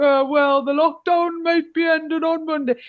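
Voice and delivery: put-on northern English accent. Imagining a politician's line said in another MP's accent: Ian Lavery's accent. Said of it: "if he had Ian Lavery's accent, he was like".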